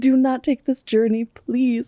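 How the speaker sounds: high-pitched pleading. Retelling how a woman begged her to stay another night: imitating someone pleading. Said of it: "she's pleading with me every step".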